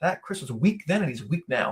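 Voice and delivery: normal talking voice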